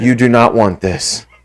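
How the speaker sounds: deep, very low, hushed half-whisper. Retelling what he half-whispered in a dude's ear during a bear hug, retelling a half-whisper. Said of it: "I'm whispering in his ear pretty much like".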